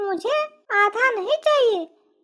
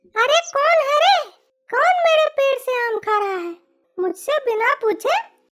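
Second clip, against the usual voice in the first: calling out loudly, demanding; 3 semitones higher than usual. A narrator voices the tree's owner stepping out of her house, shouting. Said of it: "चिल्ला क्यों रही है".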